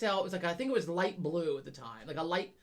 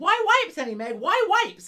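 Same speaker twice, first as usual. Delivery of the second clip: mock screaming, much higher, louder; 11 semitones higher, 10 dB louder than usual. Retelling how he followed you around while you shopped, imitating him screaming. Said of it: "he's like screaming it".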